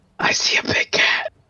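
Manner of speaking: breathy, hushed whispered aside. A player's character whispers toward the party behind them; whispering. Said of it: "I'm just gonna whisper towards my party".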